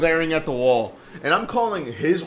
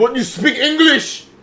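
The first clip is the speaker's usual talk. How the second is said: high, slow mock Egyptian accent. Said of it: "that's just a general Egyptian accent".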